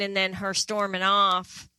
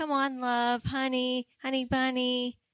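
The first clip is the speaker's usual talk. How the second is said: soft, gentle, mild-mannered sweet hushed voice; 4 semitones higher, 5 dB quieter than usual. Imitating Mahmoud calling her pet names: soft gentle voice imitating Mahmoud. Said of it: "his soft, gentle voice".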